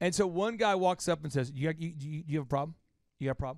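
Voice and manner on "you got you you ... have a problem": put-on agitated male stammering, lower and quieter. Retelling a club fight where one guy walks up: imitating a worked-up guy stammering. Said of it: "so worked up he can't even talk really".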